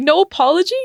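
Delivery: mock high, cracking voice on the edge of tears. Retelling an opponent's reaction to being hit: imitating a voice cracking near tears. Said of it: "her voice was cracking 'cause she was starting to cry".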